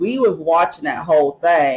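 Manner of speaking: usual speaking voice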